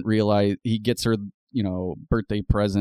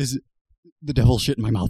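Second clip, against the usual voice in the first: put-on freaking-out voice, pitched higher; 3 semitones higher, 3 dB louder than usual. Retelling a guest's reaction to spicy food: imitating Jordan Peele freaking out. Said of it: "freaking out".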